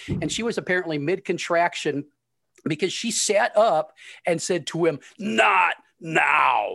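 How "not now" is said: creaky, rough demon voice, drawn out. Retelling Tasha snapping at the doctor mid-contraction: demon voice. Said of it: "and then just this demon voice".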